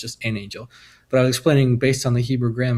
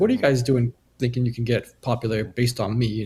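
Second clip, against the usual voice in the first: usual speaking voice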